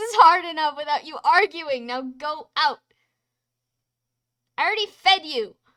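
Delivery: crying out very loud through high-pitched sobs. In an argument scene, a character speaks to the other while crying. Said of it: "I care about the fact that you're crying".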